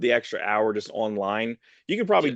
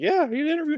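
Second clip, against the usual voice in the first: very high-pitched, careful, lifted-up voice. Describing an actor's kitchen scene, imitating his slightly higher pitch. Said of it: "he has a slightly higher pitch".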